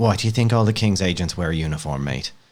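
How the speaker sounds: condescending, patronizing tone. Playing a character who pats a guard's shoulder: condescending. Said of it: "I pat him on the shoulder in a condescending way".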